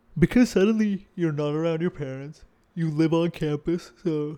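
talking through a yawn. A speaker recalls college friendships, yawning while talking. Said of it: "sorry about the yawn".

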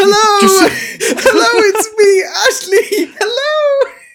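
shrill, very high, loud shouted yell. Acting out Ashley waving double-handed while riding a bicycle, imitating Ashley shouting hello. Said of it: "when I was shouting hello".

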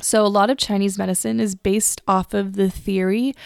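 normal talking voice

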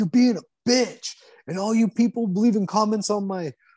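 put-on, very high, raging, screamed tirade. Retelling how a YouTuber screams at the camera: imitating Wes Watson screaming. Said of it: "be screaming at the camera".

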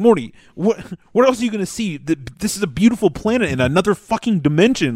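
fed-up, exasperated, complaining griping rant. Retelling a scene where the character is complaining: imitating the character complaining. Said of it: "he's like".

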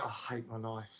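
mock muttering under breath. Speaker retells his reply when a man asked if he used to be a comedian, retelling a mutter under breath. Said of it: "I said under my breath".

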